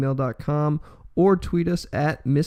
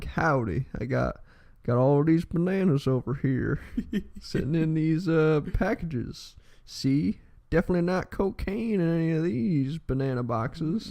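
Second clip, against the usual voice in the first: put-on Texan drawl; 4 dB quieter than usual. Joking about how a Houston drug case should have sounded: Texan drawl. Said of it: "it should have been like".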